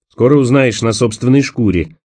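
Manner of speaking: ordinary delivery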